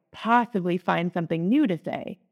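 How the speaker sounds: usual speaking voice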